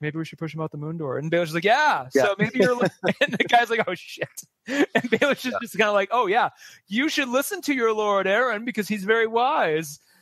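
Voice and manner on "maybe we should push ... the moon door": acted-out mutter under breath, quieter, faster. Recapping a show scene, acting out a character's remark under his breath. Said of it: "Robin just kind of under his breath is like".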